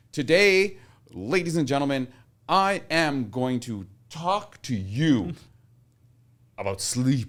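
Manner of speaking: hyper-exaggerated, slow oratory broken into phrases. A speaker demonstrates how they practice a speech opening, hyper-exaggerated delivery. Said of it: "I would like hyper exaggerate".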